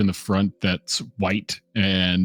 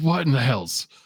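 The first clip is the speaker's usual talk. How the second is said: startled, high-pitched sudden exclamation; 5 semitones higher than usual. Voicing the captain, who jolts awake as a siren goes off: captain jolted awake. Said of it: "the captain probably jolting up awake".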